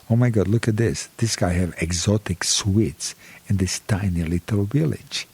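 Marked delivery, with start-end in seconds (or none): none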